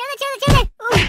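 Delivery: high, pained yelps and pleading cries.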